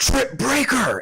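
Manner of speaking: very high bellowing battle cry. In a tabletop game, a character charges at a stone figure: bellowing battle cry. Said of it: "Max yells out in a bellowing call".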